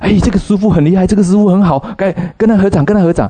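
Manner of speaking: high, fast, eager, pushy tone.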